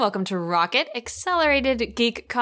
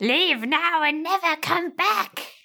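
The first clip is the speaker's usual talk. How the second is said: high-pitched fantasy creature voice; 6 semitones higher than usual. Joking around before the show starts, doing a Gollum impression. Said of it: "That was my Gollum impression".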